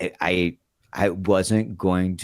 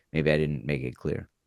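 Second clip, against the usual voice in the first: usual speaking voice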